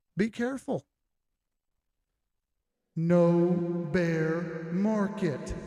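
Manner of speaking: booming, very slow, with "no" stretched out. Delivering a line in God voice because someone asked for it. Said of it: "Raging Beagle said say it in God voice".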